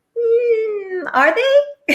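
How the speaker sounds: skeptical, drawn-out mock doubt, pitched way up.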